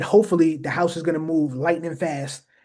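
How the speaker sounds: plain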